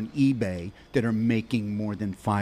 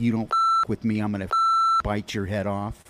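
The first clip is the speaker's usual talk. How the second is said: normal talking voice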